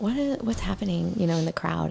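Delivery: ordinary delivery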